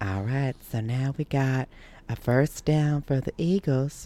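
soft, hushed, creepy pervert voice. Retelling how a referee announced a first down, in a Herbert the pervert voice. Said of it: "sounded like almost like Herbert the pervert".

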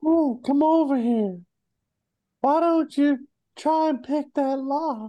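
very high-pitched cartoon character voice. Showing the voice that narrates the entire campaign, Herbert voice from Family Guy. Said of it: "Herbert, isn't that the name".

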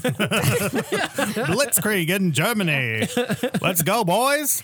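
put-on high, slow old-timey newsreel voice. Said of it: "in that old-timey voice".

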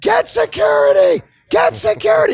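yelling at the top of lungs, high and loud.

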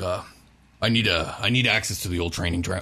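put-on drunken speech. Voicing a wobbling, still drunk character asking for access: drunk voice. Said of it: "as he's kinda wobbling, still a little drunk".

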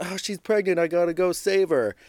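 mock woman's high-pitched yelling. Recounting a crowd running when a woman started yelling, retelling a woman's yell. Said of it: "this woman starts yelling".

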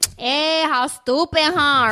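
over-the-top Latin American Spanish accent, high and slow.

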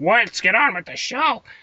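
very high, uptight, impatient put-on voice. Imitating impatient listeners who tell the show to get going: great put-on voice of an impatient person. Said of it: "that was a great voice".

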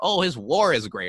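ordinary talk, nothing marked

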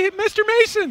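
put-on very high little-kid voice. Imitating a little kid in the section at the game: imitating a little kid. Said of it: "Did he talk like this".

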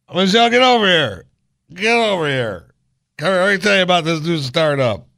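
put-on very high, loud, drunken holler. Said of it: "It's Barack drunk at the bar".

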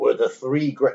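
wrestling announcer-style bravado. Quoting a character's boast: Hulk Hogan voice. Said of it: "I always use Hulk Hogan voice".

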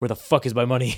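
feigned friendliness dropped, suddenly hard and dead serious. Retelling a scene where a character drops his smile: imitating a suddenly serious demand. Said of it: "smiling and then just gets super serious".

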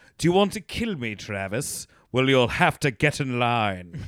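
loud, slow, drawn-out mid-Atlantic villain voice. Quoting a villain line from Cliffhanger: John Lithgow villain impression. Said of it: "that's his cadence. It's, like, this weird in between American and British".

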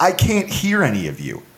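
ordinary delivery

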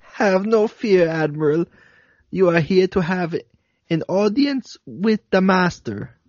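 high-pitched put-on German accent. Redoing a line to the admiral at the other host's request, german accent. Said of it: "you have to do that again in a German accent".

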